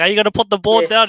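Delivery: loud, high-pitched yelling. Retelling everyone watching a try on TV: imitating yelling at the TV. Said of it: "everyone's probably yelling at the T V".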